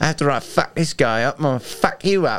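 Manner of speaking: fake English accent. Voicing an elk that stops fighting to go after a hiker: mock english accent. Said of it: "I just picture them with like English accents".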